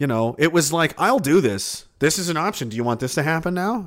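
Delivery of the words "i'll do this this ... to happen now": put-on nonchalant, casual tone. Retelling a grown man threatening another teenager: imitating a nonchalant threat. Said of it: "it was just so nonchalantly".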